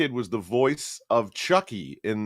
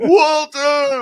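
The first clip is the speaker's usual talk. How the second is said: put-on emotional shout, higher and louder; 9 dB louder than usual. Retelling an emotional scene from the first one: imitating Eric Roberts' emotional cry. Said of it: "Eric Roberts is very emotional".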